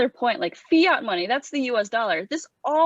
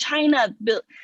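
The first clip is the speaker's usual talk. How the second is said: plain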